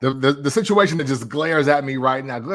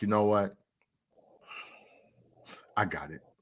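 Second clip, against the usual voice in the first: mock beaten-down, low, hushed, barely audible, utterly defeated; 5 semitones lower, 10 dB quieter than usual. Retelling a past moment of giving up, acting out utter defeat. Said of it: "In utter defeat".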